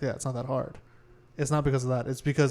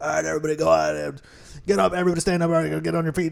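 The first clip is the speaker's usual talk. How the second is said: croaky, raspy, creaky put-on frog voice; 3 semitones higher, 3 dB louder than usual. Describing the voices others used, imitating them in a raspy put-on voice. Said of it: "They're like the the raspy".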